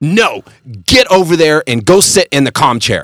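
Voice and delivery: high-pitched, scolding yell. Retelling what a teacher in a video said to a kid, imitating a teacher yelling. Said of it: "she basically yells at her".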